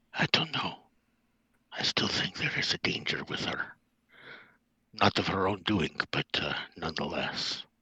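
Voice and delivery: hushed whisper.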